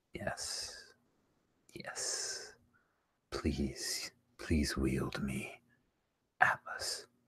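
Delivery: low, hushed whispered voice. The narrator voices a sword answering a player who calls on it, low sword voice. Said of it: "you hear its low voice".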